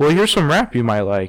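plain

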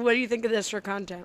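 muffled, full-mouthed speech. Asking the other speaker a question with two gummy bears in mouth. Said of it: "I've got two gummy bears in my mouth".

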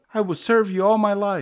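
very high, loud, shrill terrified screaming. Gooey, in terror, begs Keo to save him; screamed. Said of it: "screamed Gooey".

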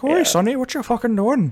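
put-on Irish accent. Pitching an Irish version of the Arbiter, the speaker acts out a line: Irish Arbiter voice. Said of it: "I like the idea of like an Irish Arbiter".

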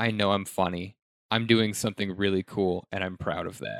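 normal talking voice

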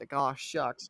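sarcastic, mock-sympathetic tone on "aw shucks". Repeating the co-host's reaction back to them: imitating a sarcastic "aw shucks". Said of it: "that sarcastic".

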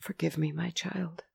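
quiet half-whisper with shame. An abbess apologizing to a tearful girl; half-whispered. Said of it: "she whispered".

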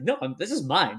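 ordinary talk

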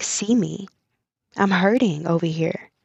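ordinary talk, nothing marked

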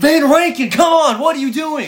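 play-acted very high, shrieking scream. Retelling watching a player miscontrol a pass: retelling a scream. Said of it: "And I screamed".

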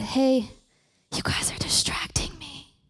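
soft, hushed whisper. Telling the audience they are distracting, whispering instead of yelling. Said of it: "My whispering is me trying, it's not me yelling".

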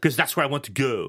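butchered put-on French accent. Retelling what his wife would say: bad french accent imitation. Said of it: "I'm gonna butcher her accent right now".

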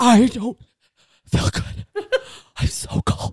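acted, slow, shivering, sickly complaining voice. Retelling what he said, wrapped in a blanket, imitating Mark shivering and sick. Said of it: "he's going like shivering".

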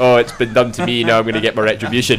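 ordinary talk, nothing marked

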